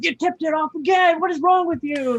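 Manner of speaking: very high-pitched, shrill, scolding yell. Retelling a dad scolding his young pitcher son: imitating a dad yelling. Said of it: "he's yelling at him".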